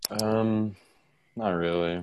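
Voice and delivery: defeated. Asked whether they want to share their handle, the speaker answers sounding defeated. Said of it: "You sound so defeated by that".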